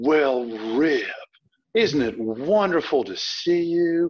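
deep, heavy, syrupy, drawn-out Southern drawl. Recalling how their grandmother greeted them, imitating grandmother's Southern drawl. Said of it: "deep Southern drawl".

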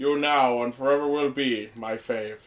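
flat alien character voice. Mid-discussion, the speaker cues a quick line in a Spock voice. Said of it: "Just cue in the Spock voice".

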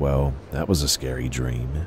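plain reading voice

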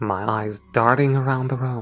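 plain

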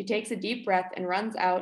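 ordinary delivery

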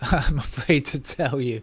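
loud delivery, laughing through the words.

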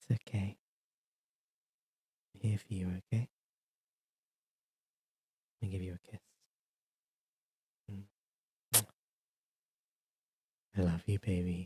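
intimate whisper, very close to the ear. Streamer doing a close-up bit for chat: whispering in your ear. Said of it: "so I can whisper in your ear".

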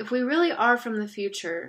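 ordinary delivery, nothing marked

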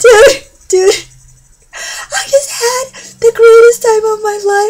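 very high, loud sobbing voice.

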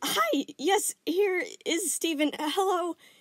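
very high, squeaky, fumbling, awkward voice. Answering her call, he squeaks out awkwardly. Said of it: "He squeaked out awkwardly".

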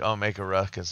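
ordinary talk

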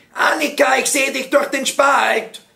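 high-pitched, rough-edged shouting. Pippi calls out to Annika through a crack, shouting. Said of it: "schrie Pippi".

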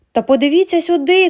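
loud, high, yelled outcry. A narrator reads a character's line as the family watches heavy snow; shouted. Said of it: "кричав Франк".

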